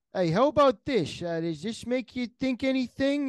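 put-on New York accent with Italian flavour. Guessing where listeners are from, a host gives a hint in a New Yorker-sounding accent. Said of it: "It's more of a New Yorker accent".

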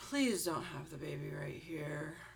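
dead-serious, stern, unfriendly delivery. Retelling what the woman behind the desk said, imitating a dead-serious tone. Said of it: "she was like dead serious".

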